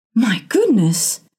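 gasping. A narrator reads Mrs. Townsend's line in a story: gasped. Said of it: "gasped Mrs".

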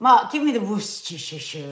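put-on French accent, man's voice. Coached to pretend cooking and quickly ask someone for the sauce, in a French accent. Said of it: "To inhabit a French man".

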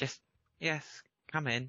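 subdued, mild reply. Lavender hears the knock and answers, in Lavender's quiet voice. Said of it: "says in a quiet voice".

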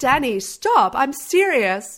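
put-on high, slow pleading girl voice. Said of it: "She's like".

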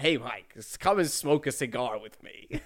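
slow, relaxed general American accent. Asked for a Tom Hanks impression, inviting someone to smoke: Tom Hanks impression. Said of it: "do a Tom Hanks impression".

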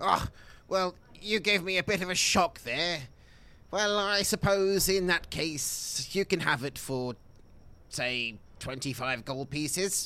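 put-on aged, old dwarf character voice. A dwarf trader answers customers asking for help with a mission, old dwarf voice.

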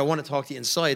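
ordinary delivery

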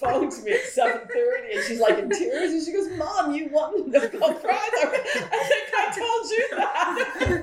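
high-pitched, laughing voice.

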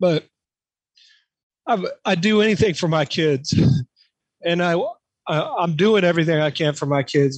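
emotional, choked-up voice catching. After recalling a parent's thanks, apologizing and going on: choked up. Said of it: "kind of choked up".

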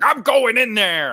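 acted furious outburst, very loud and very high. Retelling how the show's host reacts to the bar's live feed: imitating a mad tv host. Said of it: "the host guy gets like all mad and he's like".

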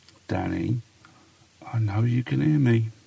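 soft, hushed, close half-whisper. Reading a story aloud, crouched alone by a urinal: half-whispering. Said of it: "and I whisper".

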